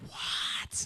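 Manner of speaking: hushed, breathy whisper. Retelling whispering back when someone whispers to him: imitating a whisper. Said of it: "respond back with a whisper".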